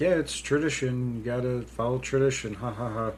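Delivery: plain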